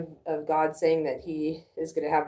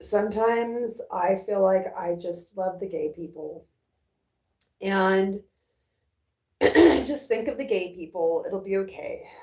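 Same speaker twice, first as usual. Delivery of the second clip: tearful voice, speaking through real tears; 4 semitones higher than usual. Talking to you guys, the speaker is genuinely crying: really crying. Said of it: "I'm really crying".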